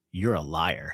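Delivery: put-on low, grandfatherly scolding voice. Retelling confronting a rider in the car: mock fatherly scolding. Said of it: "I did that grandfatherly, fatherly kind of, like, scolding".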